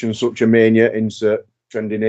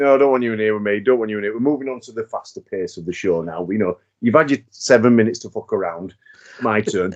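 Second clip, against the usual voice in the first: ordinary talk, nothing marked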